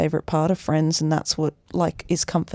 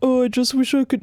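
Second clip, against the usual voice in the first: pathetic, high, little voice; 8 semitones higher than usual. Imitating Ross Geller while critiquing the cast's chemistry: mock-pathetic Ross Geller voice. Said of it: "my pathetic voice".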